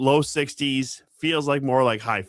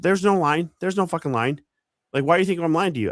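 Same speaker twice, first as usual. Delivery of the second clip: furious, snapping, high angry barking; 7 semitones higher than usual. Retelling a woman in an arriving group yelling about the line: imitating angry barking. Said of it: "this gal just starts barking at me like".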